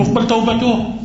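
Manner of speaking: توبته said with a high rising tune.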